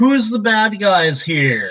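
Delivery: high, swooping call. Tabletop player, as their character about to cast Eldritch Blast, screaming out. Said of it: "use my free action to scream out".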